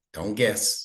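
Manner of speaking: usual speaking voice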